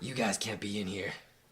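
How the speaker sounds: angry grunting character voice. Voicing an angry grunt who orders kids out: game master voicing angry grunt. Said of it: "why do I always use the same voice for everything".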